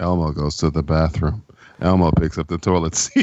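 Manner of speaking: low, flat, straight-faced deadpan newsreader delivery. Showing how to read a children's book aloud: deadpan news-reading delivery. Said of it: "Just read it just like that, like you're doing the news".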